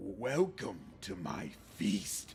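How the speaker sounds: low, twisted, guttural creature voice, very slow. Narrator reads a creature's words, in a twisted, guttural voice. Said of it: "A twisted, guttural voice bursts from the creature's throat".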